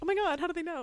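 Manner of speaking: put-on very high, giggling, gushing squeal. Imagining two people seeing the news coverage: imitating people giggling. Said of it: "they're giggling, being like".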